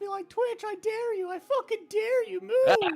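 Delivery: put-on toddler voice. Recalling a three-year-old character named Urk, high-pitched voice. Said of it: "high pitched voice like this".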